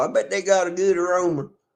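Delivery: put-on good old country boy voice. Saying his line again, this time like an old country boy. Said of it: "I'm gonna say it like an old country boy".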